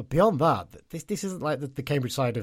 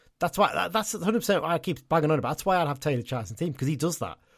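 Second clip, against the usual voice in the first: ordinary talk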